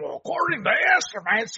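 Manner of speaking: deliberately bad put-on Irish accent. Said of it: "I can't do the Irish accent".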